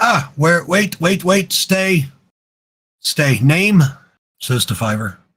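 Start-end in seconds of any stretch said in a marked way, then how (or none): 0.0-3.8 put-on high, slow goblin creature voice. A game master voices a goblin questioning a player's character, in a goblin voice. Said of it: "Goblin says".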